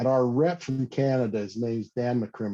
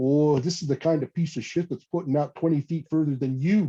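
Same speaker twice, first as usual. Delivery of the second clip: put-on speaking with a Canadian accent; 4 semitones higher than usual. Tell a true story of a casting comeback, imitating Dan's Canadian accent. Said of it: "in his Canadian accent".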